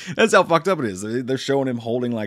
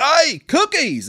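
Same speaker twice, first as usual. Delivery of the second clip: bad put-on Australian accent, very high pitch; 14 semitones higher, 5 dB louder than usual. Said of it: "my awful Australian accents".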